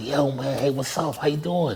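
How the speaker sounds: thrilled, bursting, happy, star-struck excited voice. Retelling meeting a famous trainer at a gym: imitating his own excited young self. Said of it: "I was always, like, happy talking, like, live".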